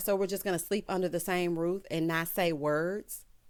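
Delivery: ordinary delivery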